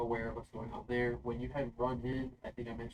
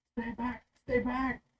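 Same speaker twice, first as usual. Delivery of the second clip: very high-pitched, loud yelling; 13 semitones higher, 5 dB louder than usual. Narrating a scene in the castle, voicing Edard's mother, shouting. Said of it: "Edard's mother um, shouting".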